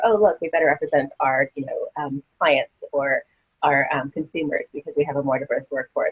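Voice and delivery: ordinary talk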